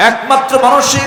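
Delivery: urgent, pressing voice.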